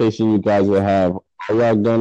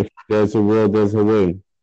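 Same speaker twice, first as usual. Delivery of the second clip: ordinary delivery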